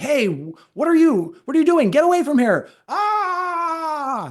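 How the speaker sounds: very high shriek, long drawn-out ah sound. Retelling how the dad suddenly shouted at something by the campfire: imitating dad screaming. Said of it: "we hear him start screaming".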